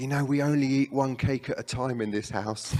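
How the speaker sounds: put-on whispered voice. Retelling a remark whispered in the ear after tea: imitating a whisper. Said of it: "just whispered in my ear".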